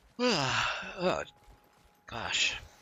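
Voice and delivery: spoken through a yawn. Apologizing to the gentlemen at the microphone, while yawning. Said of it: "I am trying not to yawn into my microphone".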